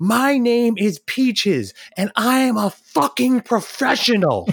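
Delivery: very high, shrieking scream. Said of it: "she screams".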